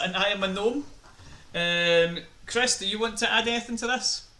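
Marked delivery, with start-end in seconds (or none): none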